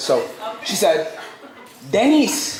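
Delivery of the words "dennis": high mock Tagalog Filipino accent. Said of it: "So I wanna do that accent".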